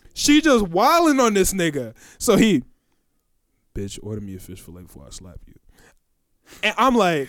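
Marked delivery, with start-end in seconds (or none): 3.8-5.6 dropped, very hushed, very quiet deep voice. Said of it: "deep ass voice".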